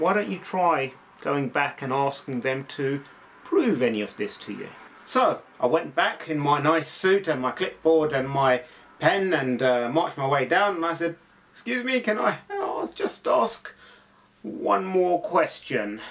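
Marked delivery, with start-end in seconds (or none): 11.5-16.0 humble, rumpled detective voice. Going back in a suit with a clipboard to ask one more question, Columbo impersonation. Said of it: "in my best Columbo impersonation".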